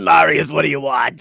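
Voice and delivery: very loud, belted lifelong-smoker voice. An ancient being who smokes answers Marius, in a voice like Marge Simpson's sisters. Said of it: "her voice kind of sounds more like Marge Simpson's sisters".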